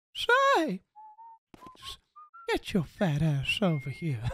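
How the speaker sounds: very high, swooping pitch, creepy leering voice. Quoting a favorite cartoon character's line, Herbert the Pervert impression. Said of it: "Herbert the Pervert is one of the best cartoon characters".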